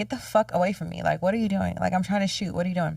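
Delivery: mock heated, angry ranting outburst. Retelling going off on a YouTuber during a shoot: retelling an angry outburst. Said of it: "go off on him".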